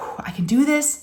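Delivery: put-on deep calming breath. Speaker retells bracing to search the bedroom with a flashlight, acting out a deep breath. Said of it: "I took like a big deep breath".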